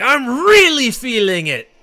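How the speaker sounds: very high, drawn-out, swooping hero battle cry. Quoting a voice clip from Xenoblade when he gets a critical: imitating a Xenoblade character's voice clip. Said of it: "He's like".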